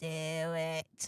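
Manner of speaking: low, hushed voice with "it" drawn out. Urging a shy listener to do it, the speaker adds an Emperor Palpatine impression. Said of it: "That's my Emperor Palpatine impersonation".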